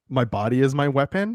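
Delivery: plain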